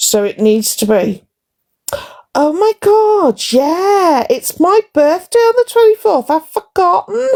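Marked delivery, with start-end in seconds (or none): 2.3-7.3 very high, fake forgetful surprise, sudden remembering. Showing a viewer how to mention a birthday: fake forgetful surprise. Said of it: "you need to say it like you've forgotten".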